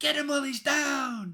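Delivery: very high, loud rallying shout, drawn out downward. Voicing a character calling to attack a downed foe: yelling out. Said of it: "Joy yells out".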